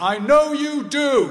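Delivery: very loud, high-pitched calling out. Leaving the hospital ward, speaker retells their dad calling after them, retelling dad's loud voice. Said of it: "in a loud voice".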